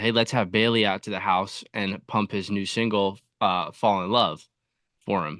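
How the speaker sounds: ordinary talk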